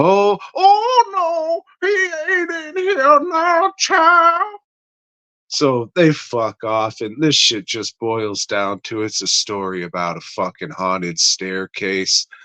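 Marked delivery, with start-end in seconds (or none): 0.0-4.4 put-on very high, slow old woman, Louisiana Cajun accent. Retelling a story, the speaker voices the old lady answering the visitor: old lady voice with Cajun accent. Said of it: "she's doing the old voice, but she's doing it with the Cajun shit too".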